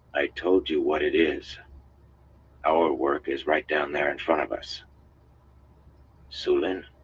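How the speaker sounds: plain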